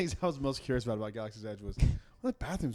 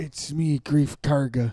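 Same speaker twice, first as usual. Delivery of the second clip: booming, drawn-out, slow, loud character voice; 2 semitones higher, 9 dB louder than usual. Watching the show with another viewer, doing a Greef Karga voice. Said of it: "That sounded more like the client than it did Grief".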